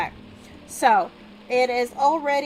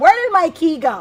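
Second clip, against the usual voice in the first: sudden, raised, loud yell; 4 semitones higher, 7 dB louder than usual. Speaker suddenly can't find their key while talking to you guys: yelling. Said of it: "I didn't mean to yell at you guys".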